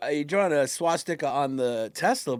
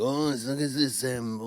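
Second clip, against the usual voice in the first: mock complaining French accent, lower pitch; 4 semitones lower, 4 dB quieter than usual. Mocking the other speaker's complaint about cars: mock complaining French accent. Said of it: "You sound like a complaining French".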